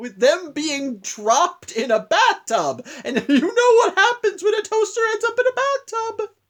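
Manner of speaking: high, slow, laughing delivery.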